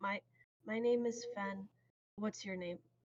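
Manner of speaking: speaking in a hush. A player's character introduces himself to another grung: hushed voice. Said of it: "I hushed my voice".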